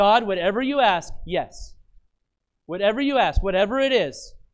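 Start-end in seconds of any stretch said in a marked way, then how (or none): none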